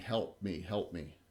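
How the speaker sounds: faint, low, barely audible, faraway distant crying. Narrating a game scene to the players, voicing a cry: distant crying female voice. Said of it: "a female voice in the distance crying".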